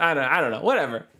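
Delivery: normal talking voice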